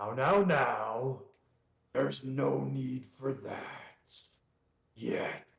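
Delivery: unseen echoing voice stretching each now. Voicing a voice that suddenly echoes around the rocks, booming. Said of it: "suddenly there's a booming voice".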